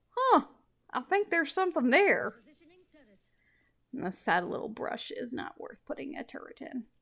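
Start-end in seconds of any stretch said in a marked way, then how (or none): 0.2-2.4 terrible put-on cowboy accent, loud and high. Acting out players looking at a brush and reacting, in a terrible cowboy accent. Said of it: "(in a terrible cowboy accent)".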